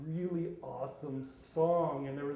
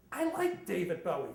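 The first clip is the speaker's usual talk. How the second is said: put-on small squeaky childlike voice; 3 semitones higher than usual. Recalling a childhood moment with his father, the speaker answers in a little kid's squeak. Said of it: "I heard my own little voice squeak".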